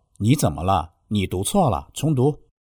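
normal talking voice

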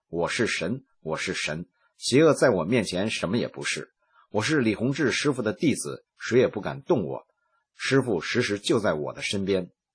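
ordinary delivery

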